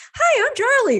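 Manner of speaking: very high, spastic, hyper-friendly dog voice. Describing the voice given to the dog Charlie, spastic friendly Charlie voice. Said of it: "like spastic friendly".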